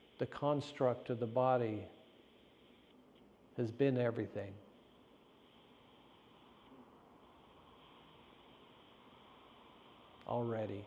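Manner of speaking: deliberate, slow pace with long silences. Speaker reflects on the body, pausing so listeners can digest; speaking slowly. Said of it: "I'm speaking slowly".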